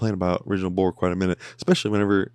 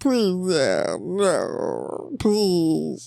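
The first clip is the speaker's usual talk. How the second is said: very high, slow, stretched-out swooping voice; 9 semitones higher than usual. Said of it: "Now I'm starting to sound like Chris from Family Guy".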